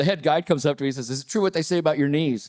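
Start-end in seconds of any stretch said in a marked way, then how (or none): none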